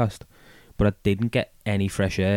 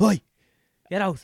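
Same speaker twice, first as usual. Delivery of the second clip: mock very high, irritated, pissy yell; 11 semitones higher than usual. Retelling knocking on a toilet door to get people out: pissy shout. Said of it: "a pissy, like".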